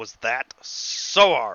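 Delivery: glowering, slow delivery. Voicing a glaring father handing over two beers: glaring father's line. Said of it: "your dad is just glaring".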